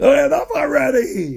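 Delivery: furious, shrill, very high-pitched angry scream. Recounting sitting with a hand up, the speaker retells the mayor's scream. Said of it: "the mayor screams out".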